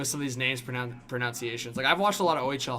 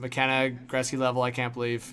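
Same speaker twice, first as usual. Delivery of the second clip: usual speaking voice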